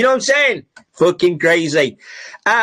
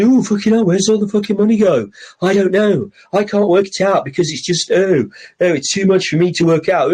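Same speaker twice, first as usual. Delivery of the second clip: mock bewildered, baffled, confused grumbling. Mocking people who don't know where Britain's money goes: imitating baffled people. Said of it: "and you're all going".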